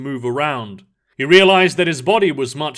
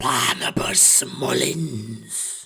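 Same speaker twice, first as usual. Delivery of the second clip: hissed, whispered, inhuman demon voice; 2 semitones lower, 7 dB quieter than usual. A horned inhuman creature confronts a man, hissing. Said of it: "it hissed".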